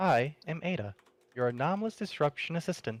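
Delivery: soft-toned voice. Voicing a talking weapon greeting a player who picked it up, soft voice as Ada. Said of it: "You will hear a soft voice from it".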